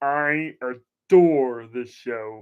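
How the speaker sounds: very slow, deliberate, drawn-out delivery. Showing a Tales from the Crypt set: Lord Hellhound imitation. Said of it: "That's my imitation of Lord Hellhound".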